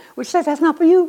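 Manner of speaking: very high, devilish put-on devil voice. Voicing what dispensationalism tells churchgoers about Jesus's words, in a devil voice. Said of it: "That's my devil voice".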